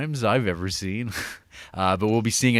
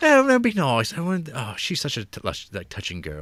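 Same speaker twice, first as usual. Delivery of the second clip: swooping put-on British accent, comedy-sketch style; 3 semitones higher than usual. Describing how British everybody is in a British comedy: put-on British accent. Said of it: "I'm trying to keep the British accent shit to a minimum".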